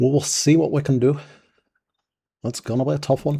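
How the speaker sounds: strong Scottish accent. Talking through a battle at a fort, the speaker uses a scottish accent. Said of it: "why we're speaking with a Scottish accent".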